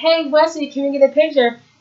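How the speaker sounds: mock yelling, calling out across a crowd. Retelling a story about waiting outside: imitating someone yelling. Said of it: "someone was yelling".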